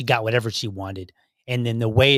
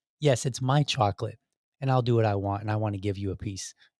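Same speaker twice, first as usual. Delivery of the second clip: imitated polite boy voice, quieter; 3 semitones lower, 6 dB quieter than usual. Retelling a boy's line to his family, imitating a polite boy. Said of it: "he says it so politely too".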